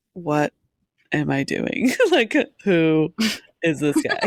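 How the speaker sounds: very slow, bewildered, puzzled musing, acted out. Acting out Varanwe seeing Tor covered in birds: acting as puzzled Varanwe. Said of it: "He's like".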